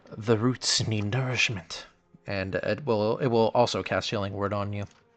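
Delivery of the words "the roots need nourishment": hushed, rustling, half-whispered creature voice. Voicing a creature wrapping tendrils around a player: half-whispering creature voice. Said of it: "you hear it whisper".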